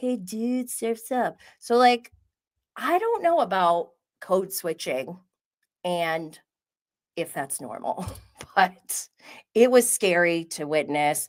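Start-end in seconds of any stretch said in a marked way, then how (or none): 0.0-1.4 put-on California surfer-dude accent. Talking about code switching, the speaker mimics people in Laguna Beach, Orange County surfer-dude voice. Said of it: "Orange County, Laguna Beach, and they're all like".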